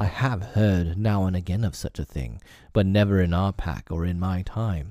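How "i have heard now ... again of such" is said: plain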